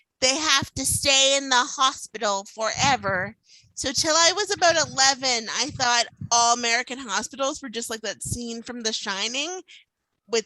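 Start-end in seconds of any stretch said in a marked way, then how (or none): none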